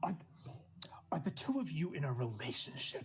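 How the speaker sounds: confidential-sounding stage-whisper aside. Recounting Cal watching two people go back and forth, quoting Cal: hushed tone. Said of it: "In like a hushed tone for that last bit".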